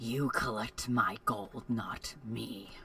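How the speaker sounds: very soft, hushed, menacing, sinister snake voice. Repeating a character's line for the group in a sinister snake voice. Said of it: "in a sinister snake voice".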